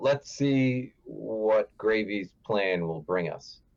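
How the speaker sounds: whispering in a hushed tone. A role-play player, in character, whispers to Starfire in a hushed whisper. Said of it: "I will whisper to Starfire in a hushed tone".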